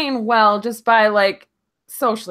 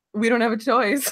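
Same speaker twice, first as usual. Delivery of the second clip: ordinary delivery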